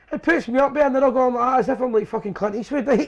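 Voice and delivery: normal talking voice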